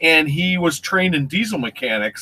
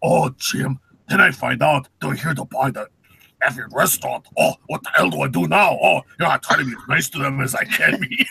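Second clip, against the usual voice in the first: put-on thick German accent; 3 semitones lower than usual. Speaker quotes a man telling him a story, in a thick German accent. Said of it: "He's not only a thick German accent".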